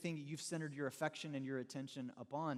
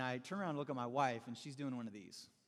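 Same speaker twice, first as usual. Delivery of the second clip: plain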